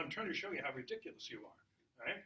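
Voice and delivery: normal talking voice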